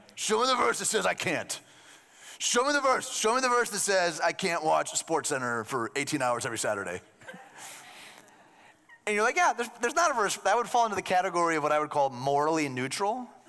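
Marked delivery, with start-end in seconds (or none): 0.2-7.0 put-on, brutish caveman character voice. Speaker imitates a guy demanding to be shown a verse, in a caveman voice. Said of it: "Some caveman".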